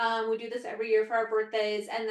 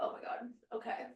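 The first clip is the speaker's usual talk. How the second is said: soft whisper under the breath. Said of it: "it's like".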